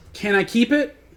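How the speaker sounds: tiny, small, high little-cat voice. Retelling what the cat asked while holding up a found hat; little voice. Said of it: "So in her little voice she says".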